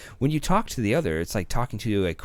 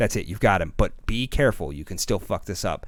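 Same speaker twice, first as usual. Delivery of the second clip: plain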